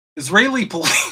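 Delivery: laughing while talking. Reading out a news headline, laughing while talking. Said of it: "I can't even say it without laughing".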